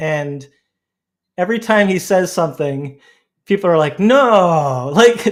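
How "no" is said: loud, very sarcastic no. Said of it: "but they're acting very sarcastic".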